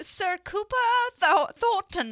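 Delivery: attempted British accent. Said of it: "I can't do a British accent with the R's".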